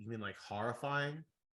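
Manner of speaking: normal talking voice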